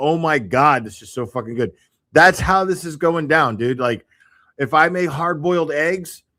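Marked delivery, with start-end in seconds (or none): 0.0-1.7 put-on overexcited gushing voice. Retelling own reaction to own cooking: imitating own overexcited praise. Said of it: "I'm totally like".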